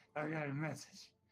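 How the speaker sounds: panting, winded, breathless delivery. Playing Magpie, who sprints back with a message, out-of-breath Magpie. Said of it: "He's like out of breath".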